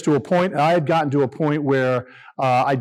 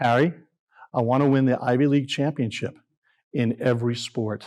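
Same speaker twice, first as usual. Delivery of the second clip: put-on whisper, lower pitch; 3 semitones lower, 4 dB quieter than usual. Recounting the president hugging him at the press conference, retelling a whisper. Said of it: "he whispers in my ear".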